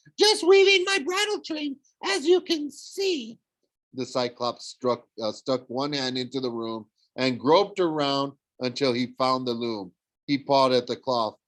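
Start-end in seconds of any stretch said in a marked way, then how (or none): 0.2-3.4 very high, put-on falsetto voice. Narrator reading Grover's reply to the monster, in Grover's falsetto voice. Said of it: "Grover said in his falsetto voice".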